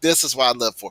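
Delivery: ordinary talk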